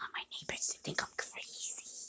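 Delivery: speaking quietly. Making a video so the neighbors won't think them crazy, speaking quietly. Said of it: "I'm really quiet right now".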